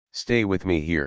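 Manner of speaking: plain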